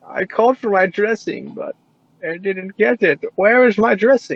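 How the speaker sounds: put-on very high-pitched elderly woman voice. Retelling Christopher calling about dressing, imitating Christopher's old-lady voice. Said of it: "he sounds like an 80-year-old lady".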